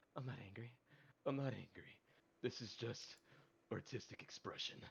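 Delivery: self-talk muttered out loud. Voicing a character who charges forward with an axe: talking to himself out loud. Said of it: "talking to himself, but, like, out loud".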